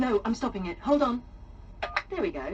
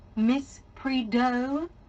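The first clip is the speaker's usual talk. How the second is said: slow, high mock French accent. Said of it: "such a lovely and exotic French patois".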